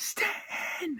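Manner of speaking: held-back, under-the-breath whispered cheering. Speaker retells exclaiming quietly instead of screaming: retelling an under-breath exclamation. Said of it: "quietly said under my breath".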